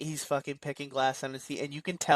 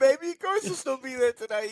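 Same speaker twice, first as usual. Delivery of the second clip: put-on drunk voice, much higher pitch; 10 semitones higher, 4 dB louder than usual. Recounting Argyle on the phone in the back of the limo, drunk Argyle impression. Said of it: "like shit faced in the back of".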